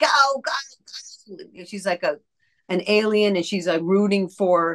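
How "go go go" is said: put-on high, rough elderly woman voice. Speaker recalls playing an alien old lady, old lady character voice. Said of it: "that old lady who's like".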